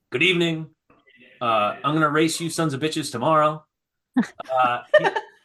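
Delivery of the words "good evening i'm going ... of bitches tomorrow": ordinary talk, nothing marked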